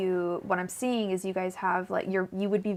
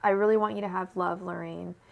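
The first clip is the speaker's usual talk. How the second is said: heartfelt, choked-up, emotional voice. Speaking to Lorraine, getting emotional. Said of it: "sorry, I'm getting emotional".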